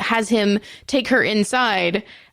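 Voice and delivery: ordinary talk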